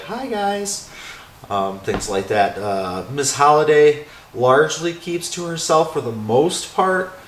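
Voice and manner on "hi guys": put-on high little girl's voice. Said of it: "little girl's voice say".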